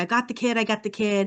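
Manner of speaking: put-on pained cry, full of anguish. Recounting a rescue attempt, the speaker voices his cop friend: imitating an anguished scream. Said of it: "He starts screaming out".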